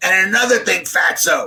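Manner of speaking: rough, rasping, raspy voice. Retelling a voicemail a woman left about the house seller, raspy voice. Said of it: "in a raspy voice".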